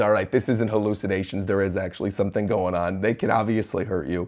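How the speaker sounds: ordinary delivery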